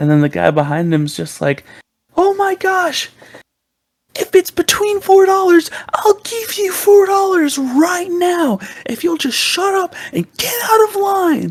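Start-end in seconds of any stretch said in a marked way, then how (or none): 2.1-11.5 very high-pitched, exasperated yelling scream, acted out. Retelling how a customer screamed at the man ahead in line: imitating someone screaming. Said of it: "they start screaming at each other".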